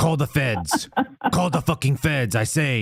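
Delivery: put-on thick, heavy Spanish accent.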